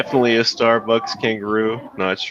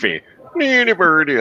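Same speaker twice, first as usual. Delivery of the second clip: mock Swedish accent, much higher pitch; 8 semitones higher, 3 dB louder than usual. Friends joking about drinking coffee, saying the word in a Swedish Chef voice. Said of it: "I've turned into the Swedish chef".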